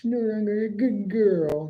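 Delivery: put-on near baby voice. Retelling how a wrestler said a line: imitating a baby voice. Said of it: "in this almost baby voice".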